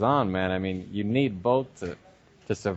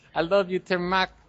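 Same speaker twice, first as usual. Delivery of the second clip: put-on Vietnamese accent in a very high pitch; 9 semitones higher than usual. Retelling videos of girls he emailed to a friend, in a Vietnamese accent. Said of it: "with their fucking Vietnamese accent".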